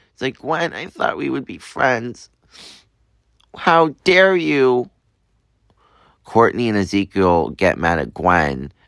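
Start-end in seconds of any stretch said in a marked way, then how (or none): 0.4-4.9 acted, high-pitched, tearful sobbing with wounded tone. Retelling a fan story, voicing a character slapped by a friend: Courtney crying. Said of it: "Courtney starts crying".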